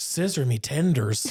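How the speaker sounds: put-on tipsy, sloshed drunken voice. Retelling what she said after getting really drunk: imitating drunk speech. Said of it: "she got really drunk and said".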